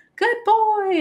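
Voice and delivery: high, loud, happy voice.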